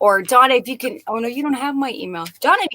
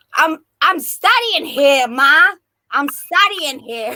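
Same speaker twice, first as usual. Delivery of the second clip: very slow, drawn-out put-on New York Brooklyn accent; 4 semitones higher, 3 dB louder than usual. Imitating a son who talks like he's from Brooklyn: imitating a Brooklyn accent. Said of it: "People think he's from Brooklyn".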